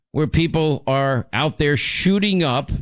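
ordinary delivery

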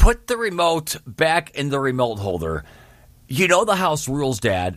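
normal talking voice

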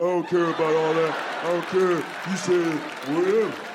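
stock put-on caveman talk. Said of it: "It's the same caveman voice".

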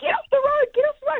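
very high, rushed, frantic, panicked repeated scream. Retelling screaming at a driver on the wrong side of the road; retelling a panicked scream. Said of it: "I'm screaming at her".

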